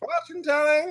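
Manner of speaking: hawker-style call. A voice on the thoroughfare calls to passersby in a game scene: calling out. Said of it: "you hear a voice calling out".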